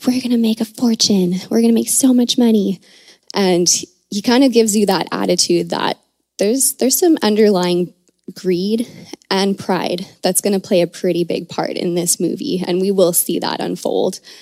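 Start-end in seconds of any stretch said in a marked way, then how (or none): 0.1-2.8 imitated whisper under the breath, higher. Retelling a movie character's reaction to seeing dinosaurs: imitating Donald Gennaro whispering under his breath. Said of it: "whispers under his breath".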